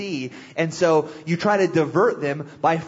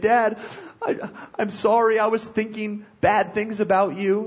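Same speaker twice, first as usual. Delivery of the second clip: put-on crying child voice, higher pitched; 5 semitones higher than usual. Retelling a son coming to apologize after discipline: imitating Seth crying. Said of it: "he'll come crying".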